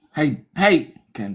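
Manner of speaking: shouting. Calling someone's name right after thanking viewers, yelling. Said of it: "What are you yelling at me for?".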